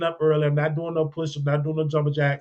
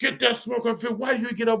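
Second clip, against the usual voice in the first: put-on high-pitched screaming; 7 semitones higher than usual. Retelling how someone screamed at him for oversleeping: imitating someone screaming. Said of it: "the dude was screaming at me".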